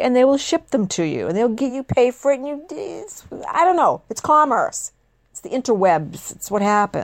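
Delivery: worked-up, irritated, heated angry ranting. A host rants about Trey's pet peeve over shipped car parts: angry ranting. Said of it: "I'm sorry I sound angry".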